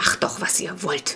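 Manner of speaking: soft, breathy, whispered, grumbling growl. The father, with Clara hugging him, gives in to the children, growling. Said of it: "knurrte er".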